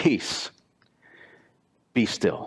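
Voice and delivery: stern fatherly voice, firm and a bit fed up. Preaching, retelling the command given to the storm in the dad voice. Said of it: "storm the dad voice".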